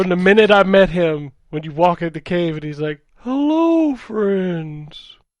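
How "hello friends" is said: high, naive, innocent-sounding voice. A gamer recalls meeting a favorite game character in a cave: imitating SK's innocent voice.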